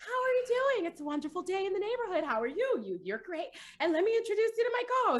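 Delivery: high, bright youtuber intro voice. Speaker reenacts getting on the mic with a co-host, in a YouTuber intro voice. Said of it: "with the YouTube voices".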